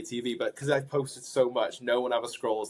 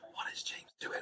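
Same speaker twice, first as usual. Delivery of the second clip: put-on whispered narration, quieter. Retelling how the show's narrator whispered over the footage: imitating Greg James whispering.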